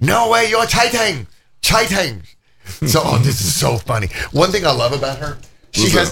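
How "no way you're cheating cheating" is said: cute, very high put-on Chinese accent. Speaker imitates their girlfriend calling out cheating: imitating girlfriend's chinese accent. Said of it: "she has this funny accent she's like".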